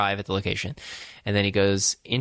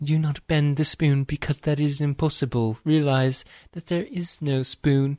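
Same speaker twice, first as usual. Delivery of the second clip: put-on British child voice, much higher; 6 semitones higher than usual. Retelling a movie scene, quoting a boy character; british kid impression. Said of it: "that was a very good impression".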